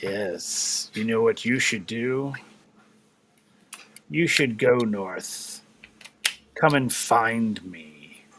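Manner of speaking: low, deep, resonant voice. Narrator voices the voice the player hears, in a deep, resonant voice. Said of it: "as you hear this deep, resonant voice".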